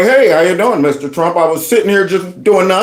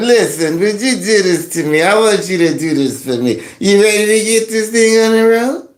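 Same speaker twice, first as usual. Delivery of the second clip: put-on, slightly drunk, tipsy voice. Acting out a woman asking you to do something for her, imitating a slightly drunk aunt. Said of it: "Little bit of the drunk aunt all the time".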